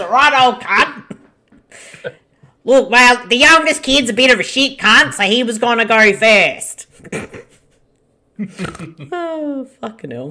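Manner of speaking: exaggerated Australian accent, laid on thick. Show hosts voice characters in a film scene; exaggerated Australian accent. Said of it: "this is hilarious doing our Aussie accents".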